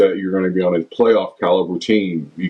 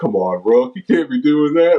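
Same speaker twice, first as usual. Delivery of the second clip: high, mock disappointed, let-down voice; 7 semitones higher than usual. Retelling how Reggie always talked to Rook, imitating Reggie's disappointed voice. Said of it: "he always would have that disappointment voice".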